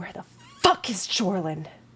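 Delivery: quiet muttering under her breath. Voicing a character muttering after backing away: muttering under her breath. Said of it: "just under her breath goes".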